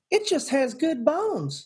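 put-on Southern accent, very high and swooping. Imitating a woman from a home show commercial: imitating a southern accent. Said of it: "I love that accent".

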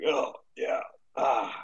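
groggy, mumbled, just-woken-up voice.

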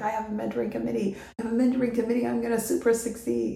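thrilled, pumped-up speech. Retelling telling people about a new mentoring committee: imitating own past excitement. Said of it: "I was super excited".

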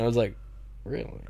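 ordinary talk

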